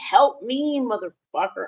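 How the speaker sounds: acted-out high, mad, furious, desperate pleading. Retelling what the speaker told a man who only offered to clean up, mock-furious. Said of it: "I was so mad".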